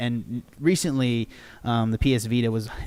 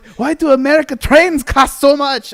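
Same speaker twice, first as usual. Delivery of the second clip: very high, very loud, bad unplaceable European accent; 14 dB louder than usual. Mimicking European people riding American trains, terrible unplaceable accent. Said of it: "I don't know what accent that was".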